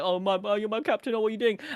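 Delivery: mock crying voice. Reading a comic aloud and acting out a character: imitating a crying character. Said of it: "he's crying like".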